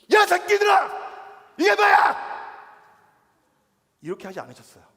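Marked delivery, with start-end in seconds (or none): 0.1-2.1 much higher, very loud furious yell. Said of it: "얼마나 화가 났는데".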